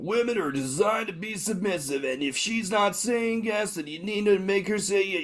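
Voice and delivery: put-on American accent, very high-pitched. Podcaster mimicking dating gurus, american accent. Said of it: "was a really good American accent".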